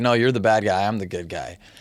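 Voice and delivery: put-on sarcastic teasing tone. Retelling how an older kid teased a child at a party: imitating a sarcastic teasing tone.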